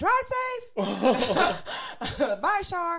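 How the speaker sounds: mock high holler, very slow and drawn out. Retelling calling goodbye to the girl after closing the gate: retelling own hollering. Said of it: "I'm hollering at the girl".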